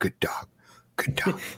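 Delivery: panting, excited whisper under the breath. Playing a character packing a rucksack: whispering to oneself. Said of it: "You can hear me whispering to myself".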